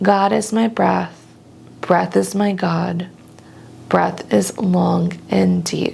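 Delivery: ordinary delivery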